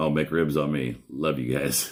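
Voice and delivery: speaking while holding back laughter. Reading a funny message aloud, trying not to laugh. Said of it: "I'm trying not to laugh".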